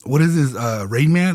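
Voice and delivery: ordinary talk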